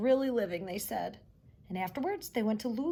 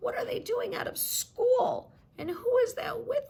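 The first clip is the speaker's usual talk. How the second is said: very high, scratchy voice; 4 dB louder than usual. Reading a story aloud as Miss Nelson watches her class pass, in Miss Nelson's scratchy voice. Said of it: "she said in a scratchy voice".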